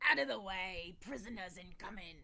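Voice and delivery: grunting orc voice. An orc pulls the prisoners along and grunts at the rest: grunting orc. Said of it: "the orc grunts at the rest of them".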